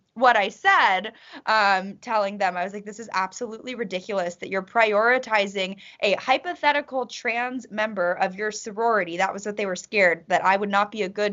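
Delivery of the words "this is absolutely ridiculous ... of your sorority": plain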